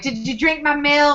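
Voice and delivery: put-on snotty tone. Retelling a scene where a little sister taunts her older sister: imitating a snotty sister. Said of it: "she's just snotty".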